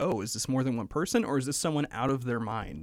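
normal talking voice

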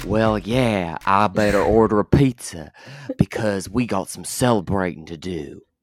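put-on, slow Southern US accent, drawled. One of the show's hosts speaks to the other in Southern accent. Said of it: "Was that a good Southern accent?".

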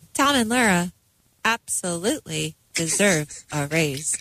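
home smart-speaker voice-assistant voice. Answering a host's question as a voice assistant: Alexa voice. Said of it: "that kind of Alexa-sounding voice".

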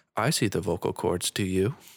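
put-on very calm, even speaking voice. Retelling how a doctor spoke during a first intubation: imitating someone speaking very calmly. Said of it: "very calmly".

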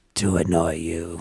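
low, demonic half-whisper. Recalling leaning close to an old guy who asked why he's alive: Exorcist demon half-whisper. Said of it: "leaned in close to him and whispered".

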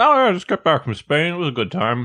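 talking while chewing, mouth full of food. Answering a question about a recent trip while chewing, mouth full. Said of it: "I'm chewing a cookie now".

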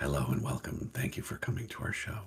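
whispered, soft, breathy public-radio host voice. Podcast co-host opening the show, in a PBS podcast host voice. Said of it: "I'm going to do it like a PBS podcast".

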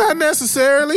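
defensive voice jumping up high.

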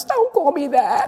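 high, sobbing cry, words choked out through sobs. Retelling being teased by boys as a child: imitating own past sobbing. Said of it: "and I'm sobbing".

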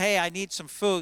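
usual speaking voice

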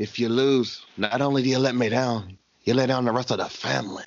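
stern mob boss voice in an Irish accent. Speaker addresses another person who might lose, Godfather impression. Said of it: "let me do it in my Godfather joint".

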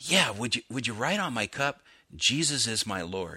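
mock-kind tone. Retelling how Dave answered the gal writing on his cup, retelling a very kind voice. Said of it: "in a very kind voice".

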